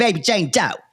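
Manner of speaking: put-on Philadelphia accent by way of Brooklyn. Imitating a character from a TV show: Philly accent by way of Brooklyn. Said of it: "this kind of Philly accent that's also by way of Brooklyn".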